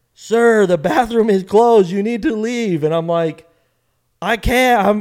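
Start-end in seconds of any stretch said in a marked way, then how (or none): 0.2-2.8 acted-out, high-pitched yell. Retelling being told to leave a restroom: imitating a lady yelling. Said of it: "the lady's like".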